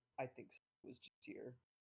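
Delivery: hushed, breathy whisper. Pausing at a warm door handle, turning to a companion: whispering. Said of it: "kind of like whispers like".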